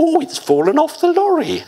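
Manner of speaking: very high, squeaky cartoon voice, pitch swinging wildly. Recalling speaking to his secretary, he puts on a Bluebottle voice. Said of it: "he put on his best Blue Bottle voice".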